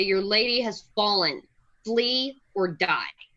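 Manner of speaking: menacing, big, scary voice, sounding enlarged. In a game, Dagger uses a spell to intimidate them in a big, loud, scary voice. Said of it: "make my voice sound really big and loud and scary".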